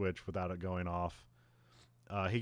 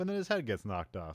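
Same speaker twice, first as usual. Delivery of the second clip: normal talking voice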